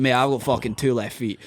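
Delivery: ordinary delivery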